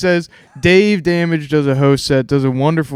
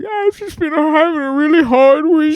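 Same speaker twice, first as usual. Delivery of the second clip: tearful, crying voice pitched very high; 12 semitones higher than usual. Retelling a comedy show where a woman in the audience started crying: imitating someone crying. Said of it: "but she started crying".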